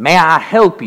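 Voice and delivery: put-on heavy Kentucky accent, laid on thick. Retelling a diner visit, quoting the waitress: imitating strong Kentucky accent. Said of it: "in a very strong Kentucky accent, and I'm going to do my best to imitate her".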